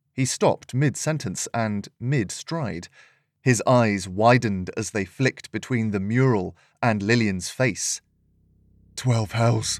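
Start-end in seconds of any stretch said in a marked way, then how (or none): 9.0-9.8 muttered, mumbled. Narrator reading a soldier's reaction on spotting the mural, muttered. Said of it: "he muttered".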